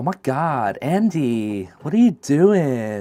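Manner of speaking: slow, clumsy, bad American accent. Asked to say something in american, the speaker tries: bad american accent. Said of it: "What what should I say in American?".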